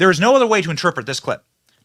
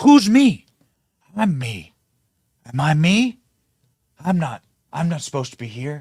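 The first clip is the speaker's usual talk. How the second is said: put-on muddled, confused, senile old man voice.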